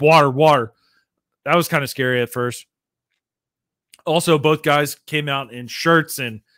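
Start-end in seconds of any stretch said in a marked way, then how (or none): none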